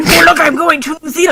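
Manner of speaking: high-pitched put-on goblin voice. Speaker acting out a post announcing travel plans, in goblin voice. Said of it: "in goblin voice".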